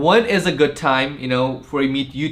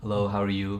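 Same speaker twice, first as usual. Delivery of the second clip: very quiet, soft-spoken, low voice; 6 semitones lower, 10 dB quieter than usual. Speaker mimics how one of the group used to talk: imitating Nikesh's soft voice. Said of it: "initially he used to have that soft voice".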